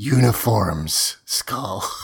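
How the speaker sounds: creepy voice, very close to the mic. Retelling a scene where Bulk gets right in Skull's face: creepy Bulk voice. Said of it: "it's the creepiest".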